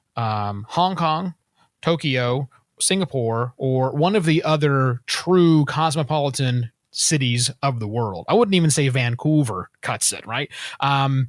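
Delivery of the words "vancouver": Vancouver said with a Canadian accent. Listing cosmopolitan cities, saying Vancouver with a Canadian accent. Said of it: "was that a Canadian accent you tried to slip in".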